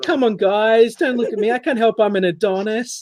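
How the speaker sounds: shy, coy, bashful, high and drawn out. Imitating a friend who is being teased, mock bashful protest. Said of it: "he's like".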